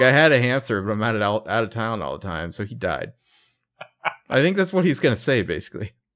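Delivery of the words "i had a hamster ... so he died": plain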